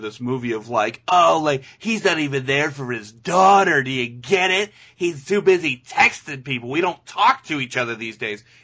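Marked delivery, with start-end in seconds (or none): 1.1-8.4 put-on snooty, know-it-all, superior attitude. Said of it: "snooty, like, I know better attitude".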